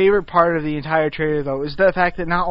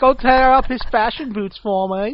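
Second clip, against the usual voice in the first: higher-pitched, campy mock voice.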